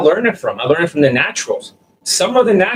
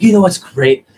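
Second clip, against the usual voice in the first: exaggerated, put-on, overly emotional, flirty delivery; 3 dB louder than usual. Describing how guys talk to women, imitating overly emotional talk. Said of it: "And they talk like this".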